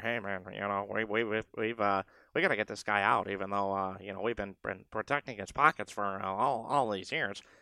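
murmured put-on voice. Voicing team owners telling the league commissioner to get a guy out, murmuring owner voice. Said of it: "That's my murmuring owner voice".

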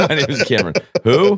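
high, giggling, laughing mock voice.

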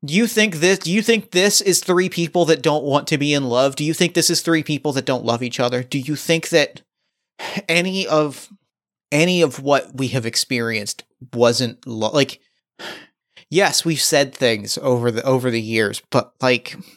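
ordinary talk, nothing marked

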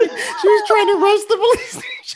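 high, loud voice, talking through laughter. Describing a tv clip to a listener, laughing while talking. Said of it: "I'm sorry that I'm laughing".

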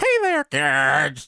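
bad cartoon mouse voice, kids drawn out. Joking about a costume voice changer that stops working, doing a bad Mickey Mouse impression. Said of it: "how awful our Mickey Mouse impersonations are".

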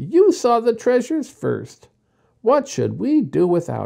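high-pitched exclamation. A girl at a dump full of dishes, exclaiming to a boy. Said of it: "cried Jessie".

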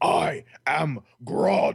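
rough, raspy, creaky tree-creature voice. Answering a request from the chat to say the line: Groot voice. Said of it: "as if I were Groot".

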